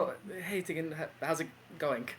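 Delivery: barely awake, super groggy voice. Playing a character waking from a hangover, still super groggy. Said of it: "so still super groggy".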